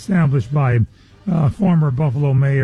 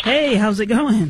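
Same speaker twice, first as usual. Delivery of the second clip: very slow, high, drawn-out, enthusiastic tone; 7 semitones higher than usual. Greeting again after being asked for more enthusiasm: more enthusiastic greeting. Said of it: "A little more, uh, enthusiastic".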